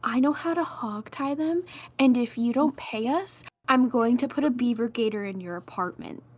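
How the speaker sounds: intimidating stage half-whisper. Playing a character leaning close to a man, a quiet half-whisper. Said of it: "and quietly whisper to the man".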